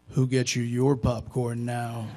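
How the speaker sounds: voice dropped deep and projected. Retelling what a former boss said at an event: imitating Bernie Shaw's deep voice. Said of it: "he said in his deep voice".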